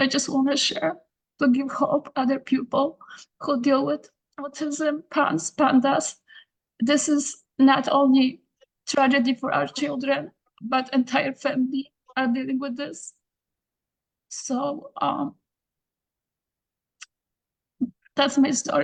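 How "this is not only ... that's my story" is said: emotional, tearful, choked up. A parent finishing sharing the family's story, emotional, near tears. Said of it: "I'm sorry about being emotional".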